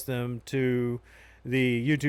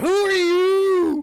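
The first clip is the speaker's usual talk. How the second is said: alarmed scream, shrill, very high and very loud; 9 dB louder than usual. Turning around and pointing at a stranger in the game: screamed question.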